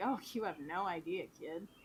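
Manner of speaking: play-acted chuckling, half-laughing, amused tone. Retelling a character's reply from a scene, laughy Caraway reply. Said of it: "in a, like, a kinda laughy sort of way".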